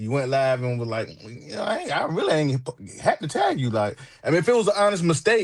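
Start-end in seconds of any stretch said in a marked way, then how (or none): 1.2-3.7 smug, cocky bragging tone with swooping pitch. Retelling what someone said on a livestream: imitating someone being cocky. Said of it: "went and got cocky".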